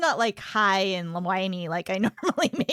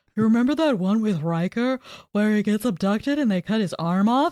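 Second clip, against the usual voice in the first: put-on goofy voice, louder; 4 dB louder than usual. Retelling what Andrew suggested watching: imitating Andrew. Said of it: "your impersonation of him has gotten a lot better".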